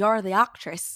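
very loud, clumsy, unconvincing put-on Irish accent. Retelling what a contractor said to the speaker, in a bad Irish accent. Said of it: "I don't have a good Irish accent".

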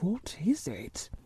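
almost whispered, very quiet, barely voiced. Reading a story where a man stands up, wondering: almost a whisper. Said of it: "almost in a whisper".

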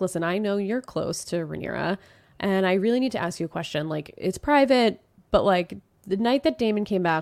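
normal talking voice

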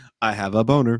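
put-on flat deadpan delivery. Recalling a school kid on the bus, imitating his deadpan delivery. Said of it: "He would say it so deadpan".

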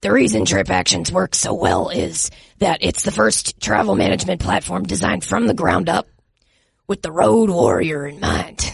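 put-on gravelly football coach voice. Reading a sponsor ad in a Coach O impression: Coach O voice. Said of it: "how Coach O would describe".

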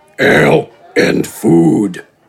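very deep, low, rumbling, grumbly mutter. A giant orders ale and food from the barkeep in a low, grumbly voice. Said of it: "In the low, grumbly voice".

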